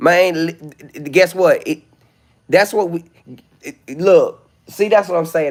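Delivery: angry stutter, tripping over words. Speaking live, demanding people be told why, angry stuttering. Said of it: "I hate to get on live mad".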